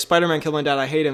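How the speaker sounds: ordinary talk, nothing marked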